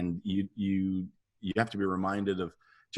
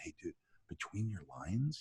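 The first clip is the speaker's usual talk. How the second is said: put-on whisper, quieter; 11 dB quieter than usual. Retelling a director's note on set: imitating someone whispering. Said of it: "he whispers to me".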